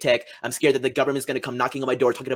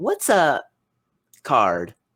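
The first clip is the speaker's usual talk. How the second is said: imitated sweet little girl voice; 2 semitones higher, 3 dB louder than usual. Retelling a young girl's question from a video: imitating a little girl's sweet voice. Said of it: "in her little sweet voice".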